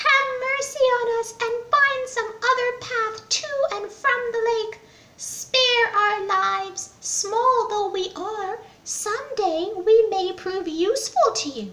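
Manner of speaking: very high, tiny, pleading little mouse voice. Reading a children's story aloud, voicing a mouse begging the king elephant; small mouse voice. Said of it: ""Oh king, we have been living near this lake for generations. While your herd came charging this way, it trampled to death nearly half our clan. We beg of you."".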